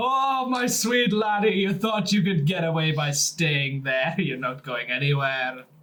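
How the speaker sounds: sinister, gloating, menacing evil voice. Speaking in character to a captive brought into the tavern: evil-sounding. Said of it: "It's very evil".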